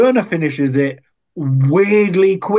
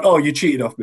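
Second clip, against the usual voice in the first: mock accusing tone, faster. Retelling one woman's reaction toward Colleen in a competition, mock-accusatory. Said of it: "she's very accusatory".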